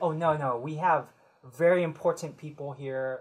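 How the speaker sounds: ordinary talk, nothing marked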